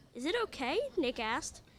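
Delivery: plain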